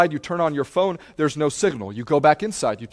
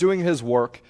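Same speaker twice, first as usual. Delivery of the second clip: ordinary delivery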